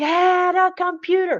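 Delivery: acted, high-pitched, barked shout. Retelling an order the guides shouted to get a computer: imitating a shout. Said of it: "they shouted for me to get a new computer".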